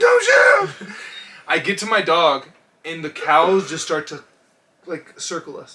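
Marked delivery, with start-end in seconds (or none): 0.0-0.9 mock frantic, panicked shout, very high and loud. Retelling running to catch their dog near a farmer, the speaker re-enacts yelling.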